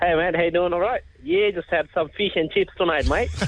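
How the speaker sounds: easygoing, casual, chatty Australian accent. Asked by the show host to demonstrate, a guest does an Australian accent. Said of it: "give me your Australian accent".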